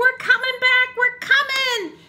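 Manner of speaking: thrilled, eager, excited storybook-style voice. Reading a picture book aloud, characters running back: excited. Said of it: "so excited".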